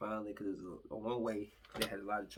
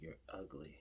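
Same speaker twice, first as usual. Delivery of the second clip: very quiet, calm, even, unraised, venomous delivery; 4 semitones lower, 9 dB quieter than usual. Describing how venomous words come out without screaming, calm, not raised. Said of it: "it'll come out very calmly, just like this".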